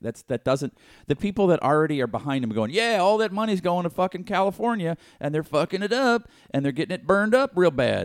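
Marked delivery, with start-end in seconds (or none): 2.7-8.1 put-on Western Pennsylvania accent on every word, pitched up. Imitating supporters who blame California: Western Pennsylvania accent. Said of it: "that's my Pennsylvania accent".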